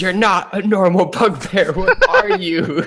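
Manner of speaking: swooping, very high, drawn-out put-on yell. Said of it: "I'm gonna start yelling at him".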